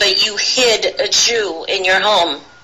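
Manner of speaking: ordinary delivery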